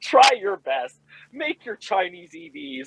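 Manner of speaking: mock haughty, smug American tone. Retelling own inner reaction while reading an article: imitating a haughty American. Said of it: "laughing in a haughty American way".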